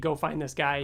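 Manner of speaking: plain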